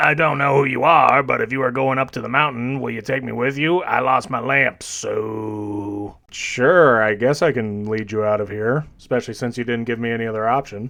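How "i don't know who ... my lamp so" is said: put-on elderly man's voice, drawn-out "so". Retelling a game, the speaker voices an old man found in a cave; old man voice. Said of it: "old man voice".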